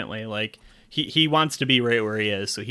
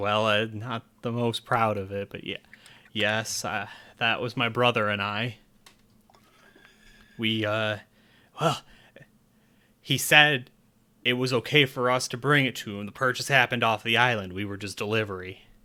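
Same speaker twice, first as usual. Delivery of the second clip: a little shy, sheepish, bashful and hesitant. Voicing a character answering a question about an artifact: a little bashful. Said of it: "a little bashful".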